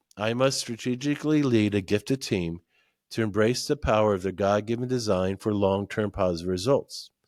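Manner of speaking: ordinary delivery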